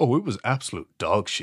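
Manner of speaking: silky, smooth radio-host broadcaster delivery. Retelling a man's voice-message reply about a book, in smooth radio voice. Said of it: "in his very like smooth radio talk".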